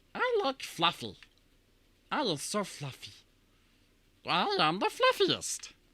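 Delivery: high, swooping, bouncy cartoon-creature voice. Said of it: "quotes that you want to hear Stitch say".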